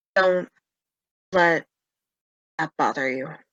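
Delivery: close, private aside for one listener. Voicing a character comforting Mira in a hug: speaking very quietly. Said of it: "And very quietly".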